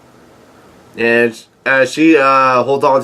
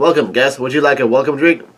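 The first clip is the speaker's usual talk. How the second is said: normal talking voice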